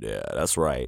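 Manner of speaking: low, deep register. Voice actor chatting to his listeners, putting on a deep voice. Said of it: "when I get all deep on you".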